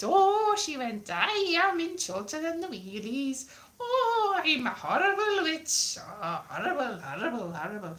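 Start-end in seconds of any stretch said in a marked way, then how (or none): 1.1-8.0 poorly done put-on Welsh accent, witchy voice. Recalling the witch from a TV show and how she talked, Chorlton and the Wheelies witch voice. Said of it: "that's not a very good Welsh accent".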